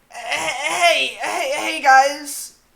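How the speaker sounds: very high, loud, scruffy, slow dog voice, bellowed. Showing the others the voice used in a fan dub: scruffy Greg voice. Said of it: "My, my Greg voice is peak".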